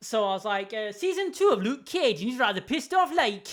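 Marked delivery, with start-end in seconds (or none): 0.9-3.5 put-on, pitched-up Newcastle Geordie accent. Retelling trying to imitate a Jamaican accent, slipping into Geordie accent. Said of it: "devolved into Georgie, uh, Geordie".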